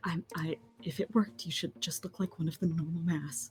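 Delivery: quiet muttering under the breath. Voicing a character muttering to a disguised companion: muttering under breath. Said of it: "So Treble mutters under her breath to Willow".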